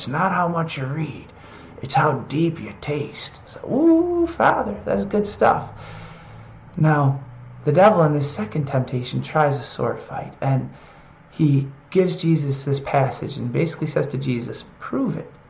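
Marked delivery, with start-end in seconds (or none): 0.0-3.4 put-on soft voice of a ninety-year-old priest. Recalling an old Franciscan priest's saying, speaker imitates him in an old priest voice. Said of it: "so I can make a voice like that".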